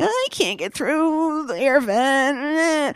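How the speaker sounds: very high, very slow, drawn-out complaining tone. Retelling a scene where she cannot get through an air vent: imitating someone complaining. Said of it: "she's complaining".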